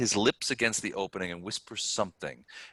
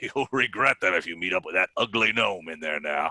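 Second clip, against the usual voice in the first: gruff, gravelly, chuckling orc creature voice; 3 dB louder than usual. Narrating a game, the storyteller voices the orc guard with a chuckling orc voice. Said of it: "with a chuckle he adds".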